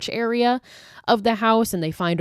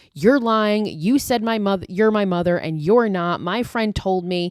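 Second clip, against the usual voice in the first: ordinary talk, nothing marked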